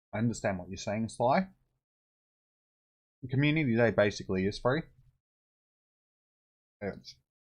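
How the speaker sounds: talking while chewing, mouth full. Answering another person's comment, talking with mouth full. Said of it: "I don't like talking with my mouth full".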